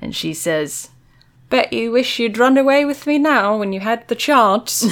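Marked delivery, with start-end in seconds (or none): 1.5-4.8 put-on British accent, pitched higher. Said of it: "you can't notice that she has an accent until she says chance".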